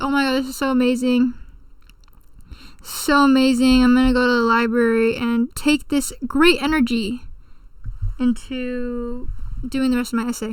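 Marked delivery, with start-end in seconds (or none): none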